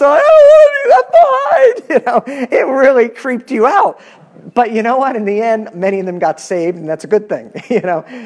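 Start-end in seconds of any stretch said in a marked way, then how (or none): 0.0-1.8 high, loud mock wail, sobbing in panic. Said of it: "crying and freaking out".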